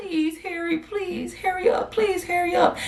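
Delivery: mock crying, high, tearful, begging tone. Retelling begging someone on the phone to hurry: retelling own crying plea. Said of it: "at this point, I'm crying".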